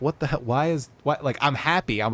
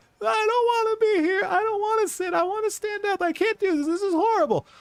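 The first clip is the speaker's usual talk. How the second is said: put-on very high, wailing two-year-old bawl. Retelling a two-year-old's words on the timeout bench: imitating a wailing toddler. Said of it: "She bawls for five minutes straight".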